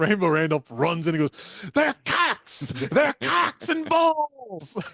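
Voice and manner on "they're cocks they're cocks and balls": play-acted shrill shrieking scream, pitched very high. Retelling a film scene where a character runs in: imitating Rainbow Randolph screaming. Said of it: "just screaming at these kids".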